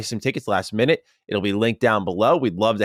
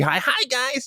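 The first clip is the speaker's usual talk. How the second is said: shrill, very high-pitched screechy voice. Showing how the usual morning greeting sounds: screechy voice.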